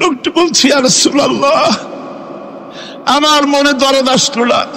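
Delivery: weeping, crying out high, tearful and breaking.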